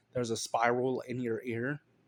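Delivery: normal talking voice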